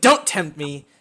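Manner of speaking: heated, very loud, angry delivery. Storyteller voicing a woman slamming her flaming sword back, in an angry warning. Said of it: "slams it back down and pushes you away".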